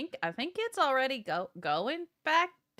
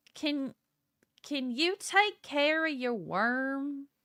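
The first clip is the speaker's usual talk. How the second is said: put-on heavy Southern accent laid on thick, "worm" drawn out; 3 semitones higher than usual. Voicing a character speaking out loud in Undercommon: thick Southern accent. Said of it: "her Southern seems to get almost thicker".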